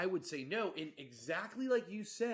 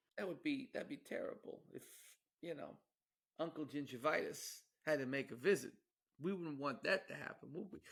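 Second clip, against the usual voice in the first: put-on wise-guy mobster voice; 4 dB quieter than usual. Joking during a conversation in a put-on voice, mafia impression voice. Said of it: "we're doing kind of a mafia impression here".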